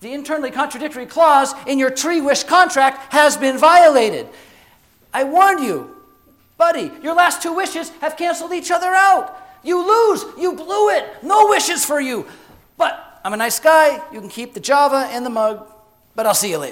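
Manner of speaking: high, loud, smirking sarcastic genie voice. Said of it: "the genie smirks at me sarcastically and goes".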